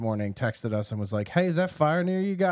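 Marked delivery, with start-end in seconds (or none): 1.3-2.5 fake Southern US accent, pitched higher. Quoting a text from an uncle, in a put-on southern accent. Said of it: "I just gave him a southern accent".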